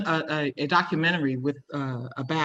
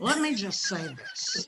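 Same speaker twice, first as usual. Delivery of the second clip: high put-on voice, pitched way up and swooping; 11 semitones higher, 6 dB quieter than usual. Imagining Whoopi Goldberg addressing the audience: Whoopi Goldberg impression. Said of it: "If Whoopi Goldberg was here, this is what she'd say to you guys".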